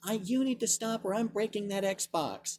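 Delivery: high, soft voice in the background. Recounting a boy's mom heard in the background, imitating a Karen-sounding mom. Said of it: "the most Karen sound in her voice".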